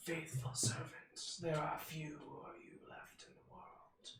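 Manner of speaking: raspy, high-pitched rasping voice. Voicing Merkel speaking to the players: raspy Merkel voice. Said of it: "Are you trying to make your voice more raspy?".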